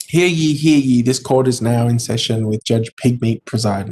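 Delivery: ordinary delivery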